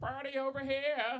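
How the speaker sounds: put-on very high, loud, rowdy drunk whoop. Showing how drunk Party Cleveland sounds: Party Cleveland voice. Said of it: "Party Cleveland comes out".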